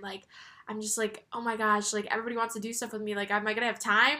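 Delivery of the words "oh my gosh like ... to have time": normal talking voice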